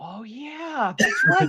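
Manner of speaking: put-on whisper. Retelling a remark to a wife during the movie: retelling a whisper. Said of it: "I whispered that to my wife".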